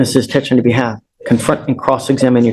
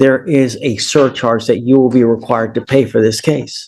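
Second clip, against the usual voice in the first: ordinary talk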